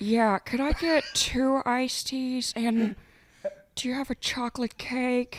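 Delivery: very high, loud put-on voice. Doing an impression on request, ordering iced teas and cake: Jennifer Coolidge impression. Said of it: "can you do a Jennifer Coolidge impression".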